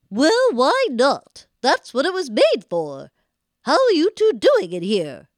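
strange witchy woman voice. Voicing the character who answers Gretel, in a weird woman voice. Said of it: "Weird woman voice".

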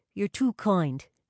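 plain

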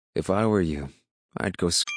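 plain reading voice

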